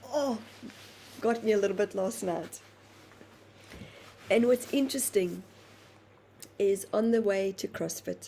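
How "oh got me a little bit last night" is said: words broken up by laughter. Explaining the laughter about CrossFit last night, speaking while laughing. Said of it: "I'm laughing because CrossFit Shirley".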